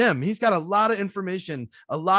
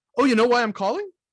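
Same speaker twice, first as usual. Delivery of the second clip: upward lilt at the end of calling; 6 semitones higher, 4 dB louder than usual. Describing an upward inflection in one moment: rising pitch on calling. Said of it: "I have an upward inflection in this moment where I go".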